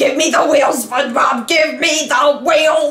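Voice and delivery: high cartoon voice. Quoting a cartoon scene about a car: Squidward voice. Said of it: "why did I sound like Squidward?".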